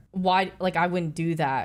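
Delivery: ordinary talk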